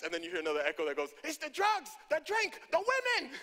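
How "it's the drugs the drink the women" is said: very high-pitched put-on Caribbean island accent. Retelling a sermon, voicing an echo from the crowd in an islander accent. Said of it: "I don't know why I made it sound like it was an islander".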